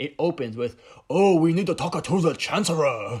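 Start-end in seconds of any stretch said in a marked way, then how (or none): 1.1-3.2 booming, high, belted-out alien voice. Quoting the opening of The Phantom Menace: imitating Phantom Menace Viceroy voice. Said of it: "that's precisely what they sounded like".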